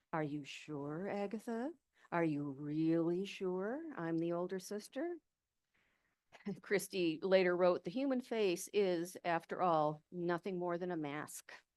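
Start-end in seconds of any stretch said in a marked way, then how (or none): 0.1-5.0 eerie, menacing, scary, spooky voice. Narrator retells the elder sister Madge questioning young Agatha: Madge's mock-scary voice. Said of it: "She would use a scary voice".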